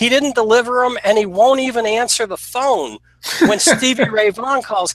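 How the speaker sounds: put-on, very high-pitched, furious angry screaming. Retelling how a man flipped out about unpaid amps: imitating someone screaming and yelling. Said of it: "he starts screaming and yelling".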